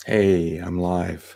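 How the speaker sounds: very deep, groggy, just-woke-up morning voice. Starting a livestream right after waking up, in a very deep just-woke-up voice. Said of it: "So my voice is very, very deep right now".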